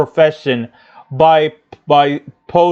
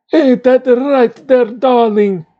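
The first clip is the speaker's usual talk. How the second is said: cheesy put-on Russian accent, pitched higher; 8 semitones higher than usual. Acting out a scene after mocking cheesy Russian accents: Natasha cheesy Russian accent. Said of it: "cheesy Russian accents".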